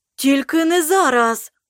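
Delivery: wild, stunned, frantic, dazed outcry. A character cries out, staring at a frightened girl, frantic, dazed exclamation. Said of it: "очманіло вигукнув Ругару".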